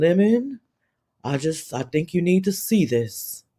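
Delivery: low, somber, solemn pastor voice. Retelling a livestream moment: imitating Jay Wilson's solemn pastor voice. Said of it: "pastor, uh, in the hospital voice on".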